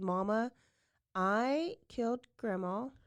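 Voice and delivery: ordinary talk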